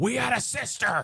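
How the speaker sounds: very high, shrill screech. Quoting a movie line, imitating Gary Busey screaming. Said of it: "Gary Busey's delivery of, like, of screaming".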